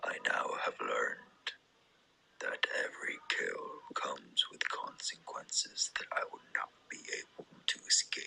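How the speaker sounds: deep voice, half whispered, hushed and breathy. Hearing the deep voice version of a character's lines: deep voice. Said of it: "that was like a deep voice one".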